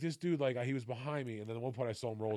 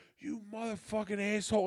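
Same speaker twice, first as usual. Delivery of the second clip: mock, high, screaming outburst; 10 semitones higher than usual. Telling how a driver pulled alongside and screamed at them: retelling a scream. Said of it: "he's just screaming at me".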